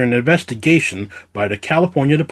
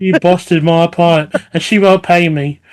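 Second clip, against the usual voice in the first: bad attempted fake Norwegian accent; 5 semitones higher, 5 dB louder than usual. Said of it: "That is not Norwegian".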